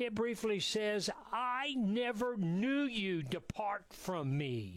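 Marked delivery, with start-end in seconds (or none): 1.3-4.8 slow, lofty, condescending and dismissive delivery. Radio host quoting a scripture passage, in a mock-condescending tone. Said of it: "because that was rather condescending".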